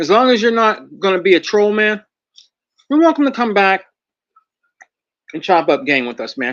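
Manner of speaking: speaking while chewing, mid-meal. Addressing the chat during a show, talking while eating. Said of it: "Sorry, guys, I'm eating".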